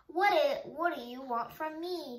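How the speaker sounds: ordinary delivery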